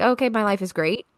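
plain

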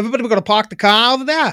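fake Boston accent on every word. Doing a Boston impression when asked: put-on Boston accent.

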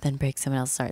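imitated whisper. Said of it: "whispering to her and he's like".

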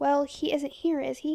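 plain reading voice

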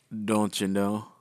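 ordinary talk, nothing marked

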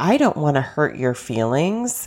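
ordinary talk, nothing marked

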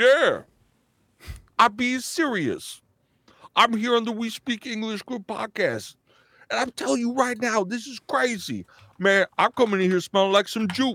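apologetic pouting voice. Showing how to do an impression, apologetic and pouting: Tracy Morgan impression. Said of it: "to do him is like, you gotta start off apologetic and you have to be pouting".

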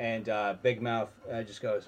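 ordinary delivery

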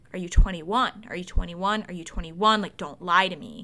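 pressing, persistent tone. Retelling what someone kept asking at the bar: imitating someone insisting. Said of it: "he keeps insisting".

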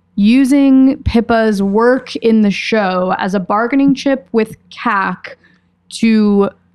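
slow, drawn-out talking.

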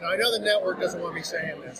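ordinary talk

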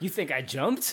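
mock touchy, affronted, defensive and unhinged retort. Quoting a movie character who insists he was pushed: imitating a defensive character. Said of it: "he seems very defensive".

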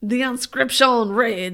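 put-on French accent. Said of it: "Can you do it with a French accent".

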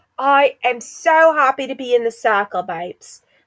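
mock Essex accent. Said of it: "Essex vibes".

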